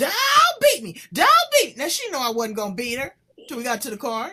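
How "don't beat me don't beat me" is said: put-on shrill, very high, very loud, swooping child's scream. A mother retells finding her hiding daughter, imitating Chanel screaming. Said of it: "She started screaming".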